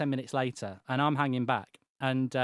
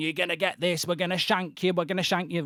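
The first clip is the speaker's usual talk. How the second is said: mock rowdy, rough, loud yelled delivery; 4 semitones higher than usual. Retelling being chased by a group of lads: imitating chavs shouting threats. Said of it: "they're shouting".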